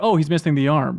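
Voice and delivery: ordinary talk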